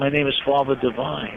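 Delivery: ordinary delivery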